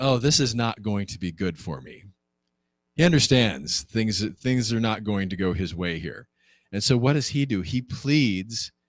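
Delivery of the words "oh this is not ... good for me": ordinary delivery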